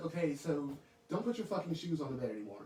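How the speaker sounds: usual speaking voice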